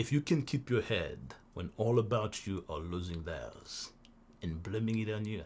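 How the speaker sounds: deep, low radio announcer voice. Reading a poem found online aloud, the speaker tries a Morgan Freeman radio voice. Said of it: "I'm gonna give you my radio voice".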